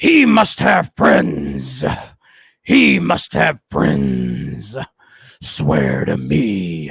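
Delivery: deep voice, swinging rhythm, dragged out. Answering a chat request to do the Bale voice. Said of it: "do the Bale voice".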